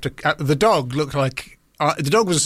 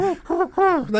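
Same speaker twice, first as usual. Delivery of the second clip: put-on dog voice, much higher and slower. Talking about how dogs react when kicked, the speaker does a dog impression. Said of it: "That's my impression of a dog".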